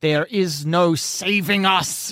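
defiant snarl like a cornered werewolf. A cornered werewolf answers those who won't let her leave the cave, snarling. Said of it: "she snarls".

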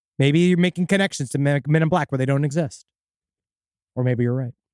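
ordinary delivery

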